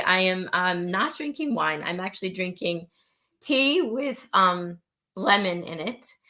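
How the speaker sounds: wobbly, shaky, sick-sounding voice. Asked how their week has been, a speaker with a bad cold answers: shaky voice from a cold. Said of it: "my voice is kind of shaky".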